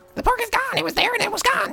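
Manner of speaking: very high, squeaking little goblin voice. Speaking as a goblin character to another player, in a squeaky goblin voice. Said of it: "goblin's speaking that squeaky voice".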